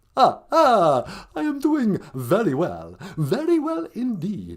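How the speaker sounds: swooping, sing-song vampire voice with swinging pitch. Playing a caller to a podcast: the Count voice. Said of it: "the Count".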